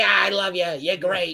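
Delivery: put-on South Philly Italian dad voice, comic. Retelling a comic's reply after being roasted: Michael Mack impression. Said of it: "that's a pretty good impression".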